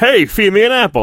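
high-pitched talking-horse voice. Mocking a film with a talking horse before watching it: Mr. Ed talking horse voice. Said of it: "Like talking like fucking yeah. Mr. Ed".

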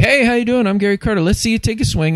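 very high, hokey, corny delivery. Retelling a corny video where Gary Carter greets you: imitating Gary Carter. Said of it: "he'd be like".

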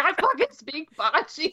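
broken-down droid voice, high and swooping. Recalling a bit from a show episode, doing a burnt-out protocol droid voice. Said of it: "his impression of this like burnt out, busted up protocol droid".

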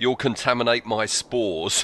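ordinary talk

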